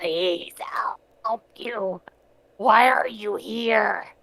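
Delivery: loud, slow, garbled, beastly creature voice. Narrating a figure who drops to his knees, crying out in a garbled halfling voice. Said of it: "crying out in his sort of halfling, sort of garbled animal voice".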